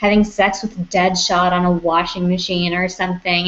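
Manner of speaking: ordinary talk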